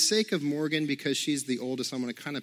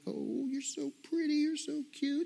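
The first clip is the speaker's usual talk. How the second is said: put-on very high, sweet baby-talk voice; 12 semitones higher, 5 dB quieter than usual. Retelling holding a newborn daughter and talking to her: imitating own baby talk. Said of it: "baby talk to her".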